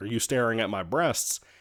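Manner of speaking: plain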